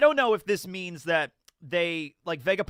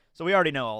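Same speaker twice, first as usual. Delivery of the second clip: normal talking voice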